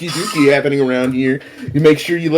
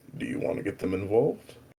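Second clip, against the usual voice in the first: completely serious, hushed whisper; 7 semitones lower, 16 dB quieter than usual. Describing someone who speaks up while walking past, retelling the line in a completely serious voice. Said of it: "completely serious voice".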